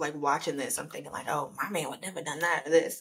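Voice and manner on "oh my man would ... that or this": usual speaking voice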